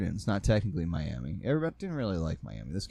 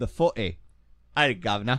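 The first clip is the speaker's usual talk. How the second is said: loud put-on British accent; 3 semitones higher, 6 dB louder than usual. Joking during podcast banter, the speaker does a British impression. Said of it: "That was my British impression".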